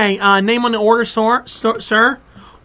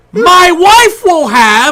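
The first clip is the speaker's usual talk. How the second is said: loud, higher-pitched put-on old man voice; 8 semitones higher, 7 dB louder than usual. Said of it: "What's he yelling for?".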